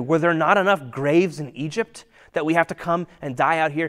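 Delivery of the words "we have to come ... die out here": ordinary talk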